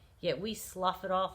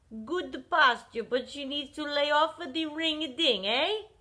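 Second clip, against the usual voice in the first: high-pitched, raised, put-on Czech accent; 8 semitones higher, 7 dB louder than usual. Recalling a woman's remark to the speaker's mother, in a put-on Czechoslovakian accent. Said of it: "In her Czechoslovakian accent".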